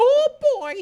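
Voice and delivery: very high, very loud squeaking voice. Joking with another speaker while enunciating; Mickey Mouse voice. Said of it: "so I sound like Mickey Mouse".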